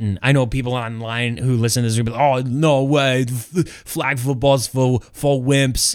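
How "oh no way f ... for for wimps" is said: very slow delivery, every word drawn out. Imitating online listeners mocking flag football: Arnold impersonation. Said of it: "Was that your best Arnold impersonation?".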